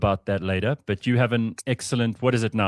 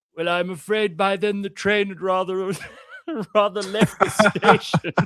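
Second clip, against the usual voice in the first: put-on high, old English gentleman voice; 10 semitones higher than usual. Retelling what an old english man told him, imitating an old english man. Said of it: "this is an old English guy".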